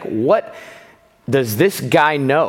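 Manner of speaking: acted slow, belittling, dismissive, condescending tone. Voicing the Nazarenes questioning Christ, in a mock-condescending tone. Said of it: "Like it's a condescending tone".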